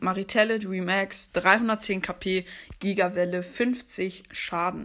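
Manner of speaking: ordinary delivery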